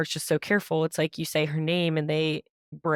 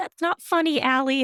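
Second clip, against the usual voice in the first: put-on tiny, very high little child's voice; 9 semitones higher, 4 dB louder than usual. Retelling their childhood reply to their laughing mom, little kid voice. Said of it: "in that little kid voice".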